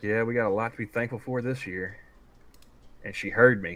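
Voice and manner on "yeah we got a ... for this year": muttered under the breath, quieter. Retelling a remark made as she turned to leave: imitating a mutter under the breath. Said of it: "I muttered under my breath".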